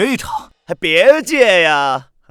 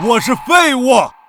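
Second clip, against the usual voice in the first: forced delivery, pitched higher; 5 semitones higher than usual. Repeating a humiliating line after being told to speak up: louder. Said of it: "大点声".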